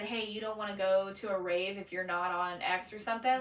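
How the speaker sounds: ordinary delivery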